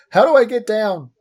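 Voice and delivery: put-on high, very loud yelling child's voice. Voicing a child stuck on a roof, in a child stuck on roof voice. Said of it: "in the voice of a of a what appears to be a child stuck on a roof".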